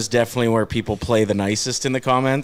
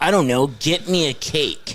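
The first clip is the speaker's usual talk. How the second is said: mock, full-on pouting, sulky, put-upon voice; 2 semitones higher than usual. Retelling what a grumpy co-host said when asked how to help, imitating a pouty voice. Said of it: "in her poutiest voice".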